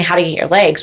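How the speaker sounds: ordinary delivery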